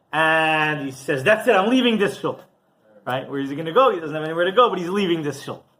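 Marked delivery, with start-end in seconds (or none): 1.2-2.4 play-acted high, angry shouted line. Acting out a man yelling back at the gabbai on Shabbos morning, retelling an angry yell. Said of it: "he starts yelling at the gabbai".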